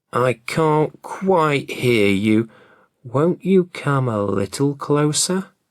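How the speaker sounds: faint, frail, weak, feeble fox voice. Narrator reads the fox answering Johnny Cake's boast: weak fox voice. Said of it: "said the fox in a weak voice".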